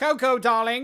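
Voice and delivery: put-on British accent. Speaker tries the words again in a put-on british accent. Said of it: "You just gotta be British".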